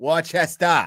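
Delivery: worcester pronounced in a Boston accent. Repeating the place name Worcester, in a Boston accent. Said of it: "I'm doing the Boston accent".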